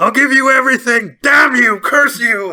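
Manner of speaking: shrill, very high, very loud wizard shriek. Retelling a book scene where a wizard yells at the guy: imitating a wizard screaming. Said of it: "screaming at the guy".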